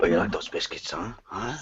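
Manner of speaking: low, soft, put-on porno voice. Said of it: "you have to do it in a porno voice".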